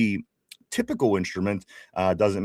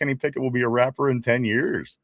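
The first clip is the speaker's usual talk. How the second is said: ordinary talk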